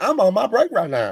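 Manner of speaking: put-on sassy attitude. Joking about a sassy DMV worker who is on her break: imitating a sassy DMV clerk. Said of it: "some sassy gal that works at the D M V".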